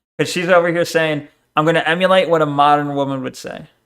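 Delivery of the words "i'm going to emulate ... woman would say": normal talking voice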